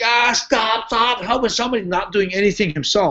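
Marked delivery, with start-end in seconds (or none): 0.0-1.8 high, panicked, frantic acted screaming. Retelling how Takada screamed while doing nothing himself: imitating someone screaming. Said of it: "Takada's screaming".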